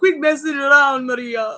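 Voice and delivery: put-on Greek accent. Retelling him voicing a daddy pineapple talking to maria: greek daddy pineapple accent. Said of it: "a Greek daddy pineapple saying".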